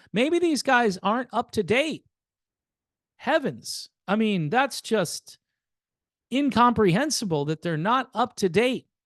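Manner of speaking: heavy sarcastic tone. Commenting on a band that is not up to date: very sarcastic. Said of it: "I'm being very sarcastic here".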